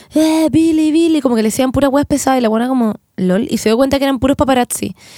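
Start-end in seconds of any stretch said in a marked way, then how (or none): 0.1-1.2 mock crowd-like, high, eager calling out. Retelling how everyone started yelling at her, retelling paparazzi shouting. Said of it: "todo el mundo le empezó a gritar, como".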